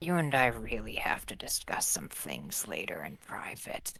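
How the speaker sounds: quiet, hushed aside. Getting close to him while handing over the rifle, in a quiet voice. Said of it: "in a quiet voice".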